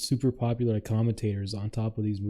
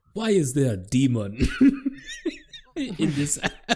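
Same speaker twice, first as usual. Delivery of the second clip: put-on Nigerian accent, high, swooping, drawn out, laughing; 5 semitones higher, 4 dB louder than usual. Retelling a bit about a Nigerian seeing an albino on Tinder: imitating a Nigerian accent.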